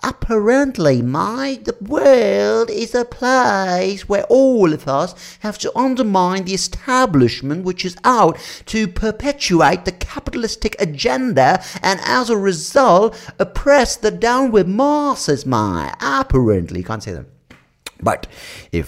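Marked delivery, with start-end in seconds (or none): 0.0-16.8 very high, unhurried voice, "place" stretched out. Mocking a rant about the establishment: Russell Brand impression. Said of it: "That sounds like Russell Brand".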